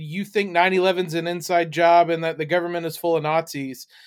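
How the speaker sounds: ordinary talk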